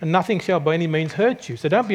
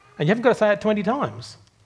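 plain

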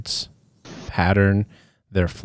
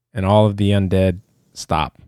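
usual speaking voice

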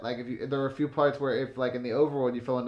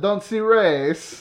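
put-on non-native English accent, much higher; 8 semitones higher, 9 dB louder than usual. Doing your impression of a guy whose cable went out, in a non-native English accent. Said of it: "My impression of a guy whose cable went out during the 800 meter relay and also English isn't his first language".

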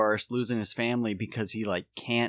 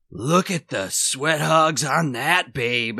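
loud, drawn-out, leering cartoon-wolf voice; 3 semitones higher, 5 dB louder than usual. Retelling a movie scene where an actor on a talk show leers at the crowd: imitating a leering cartoon wolf. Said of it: "like a wolf from a Looney Tunes movie".

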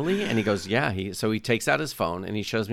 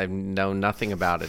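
ordinary talk, nothing marked

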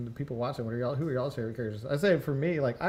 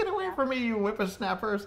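put-on old lady voice, much higher; 9 semitones higher than usual. Recounting a character's line once the effect wears off, in an old lady voice. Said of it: "she just turns into an old lady".

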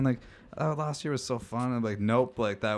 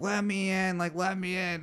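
put-on drunken, sloppy pleading, slow and high; 8 semitones higher than usual. Retelling a girl at the door begging to be let in: imitating a drunk girl. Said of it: "this hammered girl".

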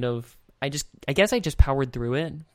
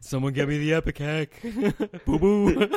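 slight put-on cartoon bear voice, pitched higher; 2 semitones higher than usual. Playing a character whose friend is in his stomach, slip into a bit of a Yogi Bear voice. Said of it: "going into Yogi Bear a little bit".

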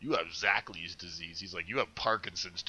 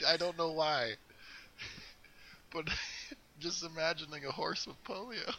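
squeaky, high voice laughing through the words; 9 semitones higher than usual. Speaker still laughing at the idea of horse polio, talking while laughing. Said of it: "I'm still laughing at horse polio".

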